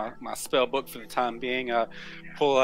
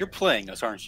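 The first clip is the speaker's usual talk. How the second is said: whispering in a put-on character voice; 2 semitones lower than usual. Leaning close in character, quietly questioning another player's character: whispering in character. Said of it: "and whisper to you".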